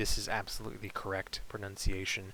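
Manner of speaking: normal talking voice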